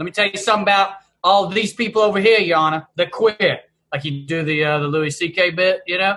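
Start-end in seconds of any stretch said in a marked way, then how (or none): 0.0-3.6 put-on South Boston accent. Retelling how a lawyer buddy addressed the judge, imitate John's thick Southie accent. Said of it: "he would put on the thickest Southie accent and be like".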